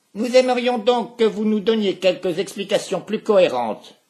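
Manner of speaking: very loud, shrill, spiteful, nasty shout. One of two interrogators turns on the man they are questioning, shouting nastily. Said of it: "vociféra méchamment son acolyte".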